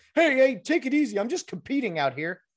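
play-acted, loud, high-pitched yell. Retelling a player answering a coach: imitating yelling back at a coach. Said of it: "you'd yell back".

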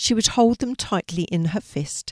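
plain

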